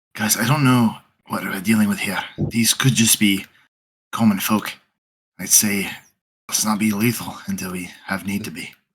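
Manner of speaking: hushed whispering. A player whispers to the other players during the game, whispering. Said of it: "I'm gonna whisper".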